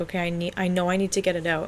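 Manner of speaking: ordinary talk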